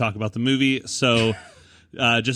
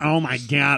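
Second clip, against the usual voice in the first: put-on Boston accent; 3 semitones higher than usual. Describing the handsome guys in Boston and how they talk, imitating a Boston accent. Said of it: "that sexy accent where where they talk like this".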